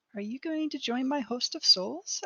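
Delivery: put-on very high little girl voice. Narrating a scene, voicing a girl walking toward the listener, in a little girl voice. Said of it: "you hear a little girl's voice going".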